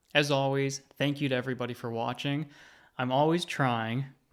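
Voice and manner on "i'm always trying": slow, with trying stressed. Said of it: "emphasis on trying".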